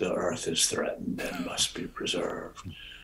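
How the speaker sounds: deep, breathy, half-whispered documentary narrator voice. Discussing nature shows, imitating the announcer at the end, deep announcer voice. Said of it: "says in a deep voice".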